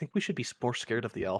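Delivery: quiet whispered mutter under the breath. Voicing a character speaking to a companion: muttering under his breath. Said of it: "mutters under his breath".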